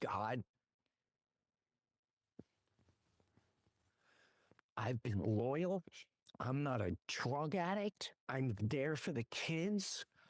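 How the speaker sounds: play-acted dead-serious, heartfelt, desperate pleading. Retelling a prayer by the roadside while sobbing: retelling his own desperate plea. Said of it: "I'm begging you".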